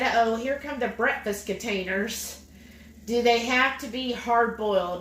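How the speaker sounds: usual speaking voice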